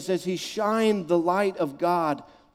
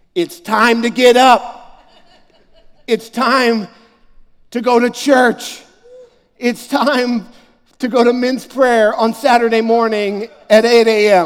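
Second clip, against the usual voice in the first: very loud, booming, higher-pitched declaring tone; 5 semitones higher, 11 dB louder than usual. Speaker recalls his dad flipping on the light to wake him, retelling dad's loud call. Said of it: "declare with a loud voice".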